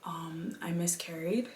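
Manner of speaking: voiceless whisper.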